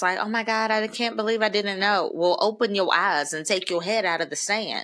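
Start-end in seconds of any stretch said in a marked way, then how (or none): 0.2-2.1 mock crying while talking. Imitating a parent on the news crying: imitating a crying person. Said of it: "this person crying, like, on the six o'clock news".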